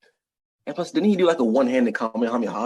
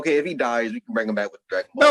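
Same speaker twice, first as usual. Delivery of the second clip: usual speaking voice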